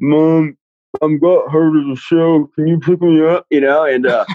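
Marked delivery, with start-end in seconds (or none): 0.0-3.5 slow, struggling, pleading, words barely coming out. Retelling a call to mom after a lip injury: imitating barely able to talk. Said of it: "I can barely talk".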